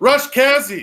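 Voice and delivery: very high, loud, shouted call. Trying the podcast credit again: yelling. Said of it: "Still yelling".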